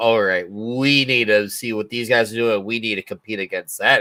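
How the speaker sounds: ordinary talk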